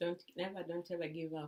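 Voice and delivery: low quiet voice.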